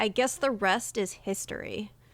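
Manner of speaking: very serious, earnest, solemn delivery. Retelling a first rehearsal take of a school play line: imitating own serious delivery. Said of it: "my first take was very serious".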